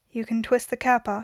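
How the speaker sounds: ordinary delivery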